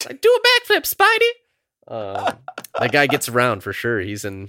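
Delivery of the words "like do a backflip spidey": squeaky, very high, slow, drawn-out sing-song. Talking about a minor movie character, quoting him in a super high-pitched voice. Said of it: "that guy with like the super high pitched voice".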